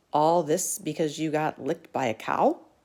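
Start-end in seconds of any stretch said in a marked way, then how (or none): none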